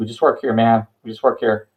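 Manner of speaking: fast, jittery, nervous pleading tone. Voicing wide-eyed workers raising hands, saying they just work here: nervous workers pleading innocence. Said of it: "raise their hands up and go".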